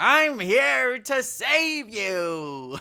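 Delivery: screechy, very high, loud, slow, drawn-out voice. Describing God's voice in a show, a speaker does a Gilbert Gottfried voice. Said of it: "Gilbert Gottfried's horrible, awful, terrible voice".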